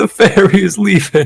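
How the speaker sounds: high, tearful, sobbing voice, acted out. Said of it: "Are you crying?".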